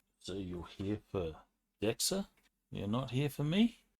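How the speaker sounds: halting, uncertain, hesitant delivery. The narrator voices a man the group came to rescue, speaking hesitantly. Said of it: "He will sort of hesitantly say".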